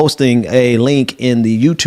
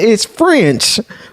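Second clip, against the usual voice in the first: put-on American Southern accent; 10 semitones higher than usual. Quoting what a woman said, imitating her southern accent. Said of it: "I didn't know she had a southern accent. She was like".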